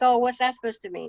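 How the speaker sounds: ordinary talk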